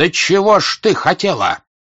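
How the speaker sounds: heated, loud exclamation, drawn out. Marya Dmitrievna answers her listener, exclaiming, getting heated again. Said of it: "вскрикнула, опять горячась".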